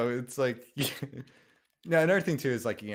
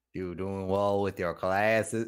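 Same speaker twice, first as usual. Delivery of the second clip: put-on boring uncle voice, lower pitch; 5 semitones lower than usual. Contrasting Larry King with Stan Lee: Larry King impression. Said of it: "differences between Larry King and Stan Lee".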